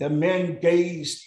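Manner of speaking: ordinary delivery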